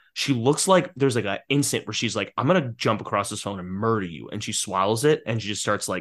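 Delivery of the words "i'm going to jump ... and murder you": plain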